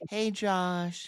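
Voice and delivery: put-on girl's voice, very high and girly. Retelling a prank phone call from a friend: imitating a friend doing a girl's voice. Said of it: "he was doing a girl's voice".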